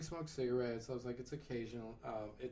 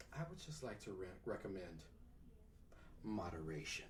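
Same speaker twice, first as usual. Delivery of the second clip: grave, dead-serious delivery; 5 semitones lower, 9 dB quieter than usual. Retelling what the doctor said after she got serious: imitating someone speaking seriously. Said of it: "she got real serious for me".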